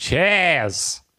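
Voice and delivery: cheers said with an Australian accent. Showing how the goodbye sounds Australian: Australian accent. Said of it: "that's Australian".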